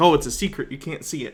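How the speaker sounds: normal talking voice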